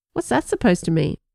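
usual speaking voice

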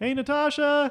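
loud high-pitched yelling. Showing how the line goes when yelling to Natasha, not at her. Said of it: "I'm yelling to her".

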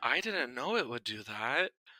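put-on, most innocent-sounding voice. Retelling how a character excused himself: imitating a most innocent voice. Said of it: "he plays his most innocent voice".

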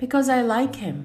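high-pitched female voice. Reading a jinni answering a saint's question, in a high-pitched female voice. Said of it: "in a high-pitched female voice".

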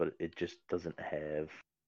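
normal talking voice

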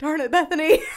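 put-on very loud, high-pitched outburst in a southern accent. Imitating a co-host who lost his train of thought: imitating Eric in a southern accent. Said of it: "kinda gave you a southern accent".

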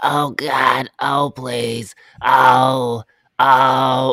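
wacky, loud, very slow, very drawn-out voice. Describing a movie, the speaker does her lines, imitating her wacky movie voice. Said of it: "in her voice".

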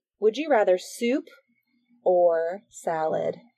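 very slow and drawn out, each word kept separate. Host asks Jackie a would-you-rather question, saying it really slowly. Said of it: "I tried to say it really slowly".

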